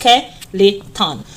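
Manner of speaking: skeleton very slow, each syllable stretched out.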